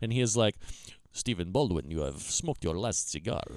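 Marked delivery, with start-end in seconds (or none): 1.1-3.4 very low, thick-accented cartoon hitman voice. Speaker acting out a hitman character he is describing, in a heavy accent. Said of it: "heavy, heavy accent".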